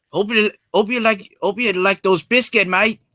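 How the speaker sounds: put-on Australian accent. Asked about nationality in a chat, the speaker shows off an Australian accent. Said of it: "don't you like my Australian accent so far".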